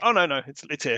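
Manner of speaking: ordinary delivery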